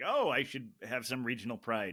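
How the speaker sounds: ordinary talk, nothing marked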